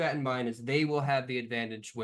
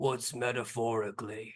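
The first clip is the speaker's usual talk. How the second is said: grumbly character voice, words grumbled out. Kong leans over to Cloverfoot with a question: grumbly Kong voice. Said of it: "you hear a grumbly voice of Kong".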